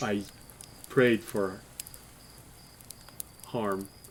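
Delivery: hushed, slightly guilty near-whisper. Voicing a character's reply in a scene, in a bit of a guilty voice. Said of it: "He says it in a bit of a guilty voice".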